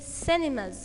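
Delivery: CIN in cinemas stressed, with falling pitch. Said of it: "The first part is stressed".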